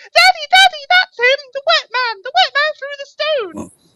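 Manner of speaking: put-on piercing, shrill, very high, very loud child's shout. Narrating a game scene, a child calls out to their father; shrill childlike voice. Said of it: "a shrill, childlike voice going".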